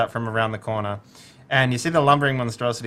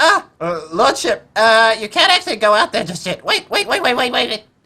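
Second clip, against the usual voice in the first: piping, very high, loud gnome character voice; 12 semitones higher, 7 dB louder than usual. Voicing a gnome who tells his lordship to wait: gnome character voice. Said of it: "let me get the voice right".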